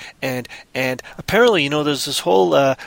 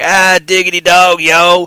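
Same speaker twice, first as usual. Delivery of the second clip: very loud, slow, drawn-out put-on Western accent; 4 semitones higher, 9 dB louder than usual. Musing about reading something aloud in another accent, trying out a Western accent. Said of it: "I might do it in a Western accent".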